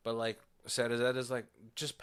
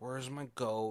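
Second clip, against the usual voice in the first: put-on, panicked, freaking-out voice. Retelling a scene where a character has lost her goat: imitating someone freaking out. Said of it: "freaking out".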